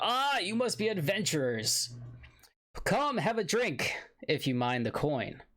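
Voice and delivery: put-on high, exclaiming old dwarf voice calling out loudly. Narrator voicing an elderly dwarf behind the bar greeting adventurers, exclaiming elderly dwarf. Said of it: "he exclaims to you".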